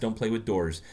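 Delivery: plain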